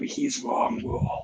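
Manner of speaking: hushed whisper. Speaker repeats what he just leaned in and said: retelling a whisper. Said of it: "I just leaned in and whispered".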